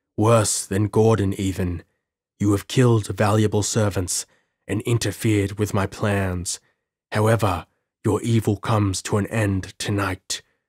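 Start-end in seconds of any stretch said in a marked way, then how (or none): none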